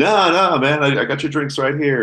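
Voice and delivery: nervous, high and loud, hurried.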